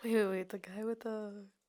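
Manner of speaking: hushed whisper. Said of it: "Why are you whispering?".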